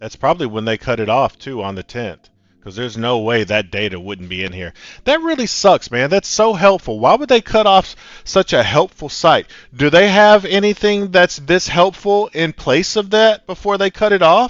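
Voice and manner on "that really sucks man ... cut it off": very high, very loud, shrill, raised-voice ranting. The speaker rants to listeners with a raised voice. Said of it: "Instead of and raising my voice".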